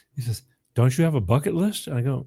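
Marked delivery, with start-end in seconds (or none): 0.8-1.9 put-on Southern accent. Retelling what a man asked him, in a put-on Southern accent. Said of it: "I'm going to do some Southern accent".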